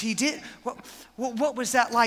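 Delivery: tearful, high-pitched voice, crying. Acting out Mary hearing that an angel appeared to Joseph: in tears. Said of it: "I could just see her just in tears".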